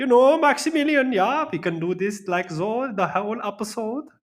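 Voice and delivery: weird put-on German accent, very high and loud. A show co-host, asked about his sudden accent, keeps talking in a weird German accent. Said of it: "What's with the weird German accent".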